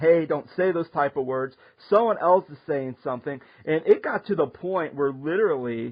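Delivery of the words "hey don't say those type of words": usual speaking voice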